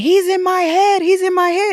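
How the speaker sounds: play-acted, very high, repeated screaming. Retelling what she screamed when the tv was turned on, imitating someone screaming. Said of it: "she starts screaming".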